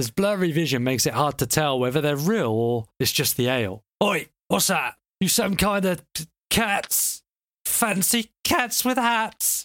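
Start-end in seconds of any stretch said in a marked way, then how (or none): 4.0-9.6 put-on tipsy, half-woken drunken guard voice, pitched up. Narrating to the players, voicing a guard just roused from sleep: drunken guard voice. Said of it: "He snickers drunkenly".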